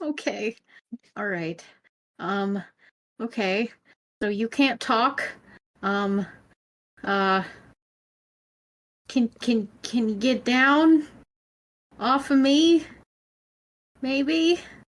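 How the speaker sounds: slow, halting, filler-heavy stammer, rising pitch. A psychic ghost investigator asks a ghost cat to get off him: hesitant, stammering. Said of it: "but first Gabriel used his abilities to check the place for ghosts and sensed three spirits inside, / and [name] playing Gabriel Winchester, the psychic".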